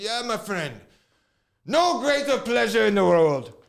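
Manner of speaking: booming, heavy Irish brogue, loud and high. Retelling what a man peeing on a minivan said to him, thick Irish accent. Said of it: "he had a thick Irish accent".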